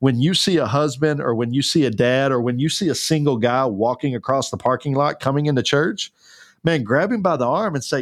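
ordinary talk

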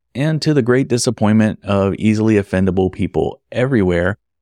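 plain

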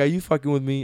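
normal talking voice

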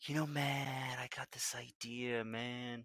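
very hushed, very quiet, slow voice. Imagining how an idea was pitched to a creative writer: Bray Wyatt impression. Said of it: "I picture Bray kinda talking like that".

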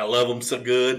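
put-on rural Kentucky accent. Imitating a man who films himself at lunchtime in his semi, Kentucky hick accent. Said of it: "he talks like a Kentucky hick".

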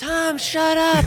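very high, strained stage whisper, almost screaming. Speaker shows how people scream indoors while others record: stage whisper. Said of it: "I'm doing that thing where people are inside".

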